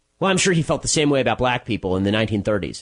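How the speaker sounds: plain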